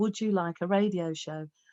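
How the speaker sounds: ordinary talk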